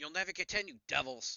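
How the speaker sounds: put-on shouting in young woman's voice. Narrating the scene, voicing a young woman behind the door, yelling. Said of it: "a young woman yell".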